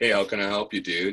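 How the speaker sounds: put-on male voice assistant voice. Retelling what a phone assistant set to a male voice says: male Siri voice. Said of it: "changing my Siri to a male voice".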